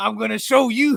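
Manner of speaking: rough, loud, gruff, swaggering tough-guy growl. Acting out a counter worker facing a customer, in a Mr. T voice. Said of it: "that was my mister T voice".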